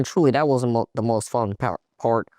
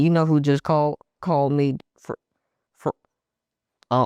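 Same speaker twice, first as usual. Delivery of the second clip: stuttering, stammering and tripping over words; 4 semitones higher than usual. Speaker recalls what their dad told them that morning, stuttering. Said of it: "I'm stuttering".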